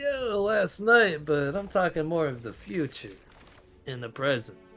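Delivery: loud put-on Chicago mobster accent. Answering a fellow player about last night's game: Chicago gangster accent. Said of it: "Why do you sound like a Chicago gangster right now?".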